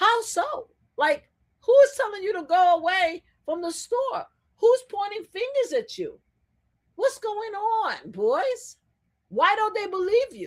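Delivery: high, sarcastic mocking tone.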